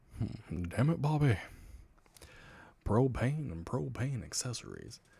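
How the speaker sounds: cartoon character voice with wide swooping pitch. Doing a voice after saying one can sound like Hank. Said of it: "You can sound like Hank".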